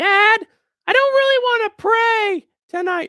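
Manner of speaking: put-on very high kid voice. Asked to do an impression of someone's children, impression of someone's child. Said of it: "do an impression of Chandler's children".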